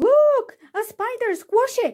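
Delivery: very high, sudden, shrill scream. Someone among the children in the classroom cries out, screaming. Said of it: "screamed someone".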